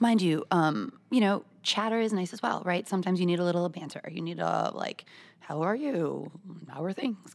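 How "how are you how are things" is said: quiet, mechanical robot voice. Giving an example of small-talk chatter: robot voice. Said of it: "I like how you just became a robot".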